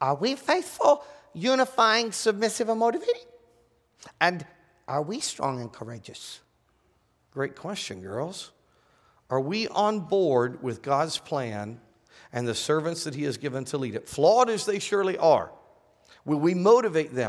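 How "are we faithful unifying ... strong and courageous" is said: very high, sing-song put-on little-girl voice. A speaker poses a final question to the listeners in a little girl voice. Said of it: "we're asking in our little girl voices".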